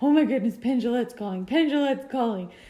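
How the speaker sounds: put-on giddy little-schoolboy voice, gushing, excited, repetitive. Retelling the other speaker's reaction to a call: imitating someone very excited. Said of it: "You were very excited".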